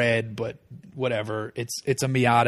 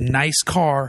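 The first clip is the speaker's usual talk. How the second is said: play-acted, top-of-the-lungs taunting, jeering holler; 3 semitones higher, 3 dB louder than usual. Retelling a passing driver who screams out his window: imitating a screamed insult. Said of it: "out his window screams".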